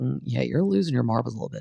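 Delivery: ordinary talk, nothing marked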